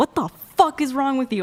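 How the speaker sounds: furious, high, angry yelling. Retelling yelling at him in the car for thirty minutes: retelling angry yelling. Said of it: "I was like yelling at him".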